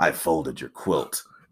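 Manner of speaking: very low, deep, quiet, soft tough-guy voice. Acting out a silly scene the speaker imagines, in a Batman voice. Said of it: "he's using a Batman voice".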